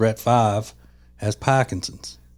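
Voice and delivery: Boston accent with newscaster-style delivery. Retelling a line that stuck in their head, in a Boston accent. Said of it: "in the Boston accent".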